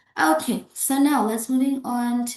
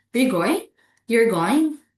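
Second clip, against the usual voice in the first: rising pitch at the end of "going". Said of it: "speaker to unsure about the listener's plan".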